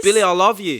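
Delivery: put-on loud, high, belted Australian accent. Recapping the plot, voicing her Australian ex-boyfriend Brad in his accent. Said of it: "And he talks like this".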